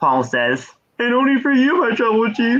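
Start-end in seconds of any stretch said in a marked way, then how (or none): 1.0-2.6 high, tearful, shaky, trembling voice through sobs. Recounting a scene, quoting one man's reply to another, imitating someone crying. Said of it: "He's crying when he's saying this".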